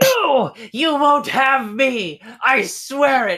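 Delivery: high, drawn-out struggling shout. Telling a story, the narrator voices a gnome on the lower deck, shouting while struggling. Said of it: "struggling and shouting like".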